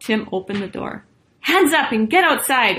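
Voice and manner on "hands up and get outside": high-pitched, commanding, authoritative tone. Narrator reads one of the gorillas speaking after Tim opens the door: ordering. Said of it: "ordered one of the gorillas".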